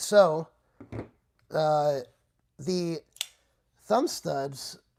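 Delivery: loud, halting voice cracking mid-phrase. Describing a product's features, the speaker's voice unexpectedly cracks. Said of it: "I don't know why my voice just cracked".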